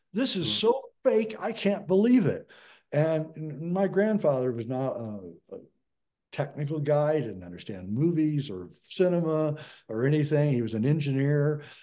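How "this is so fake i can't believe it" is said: put-on scream, higher. Retelling how a grandfather stood up during the moon landing: imitating a scream. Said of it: "stood up and screamed out".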